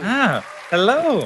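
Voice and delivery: slow, high, mock-folksy voice.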